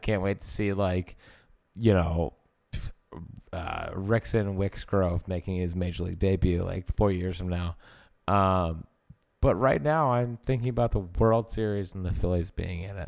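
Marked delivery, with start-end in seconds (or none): none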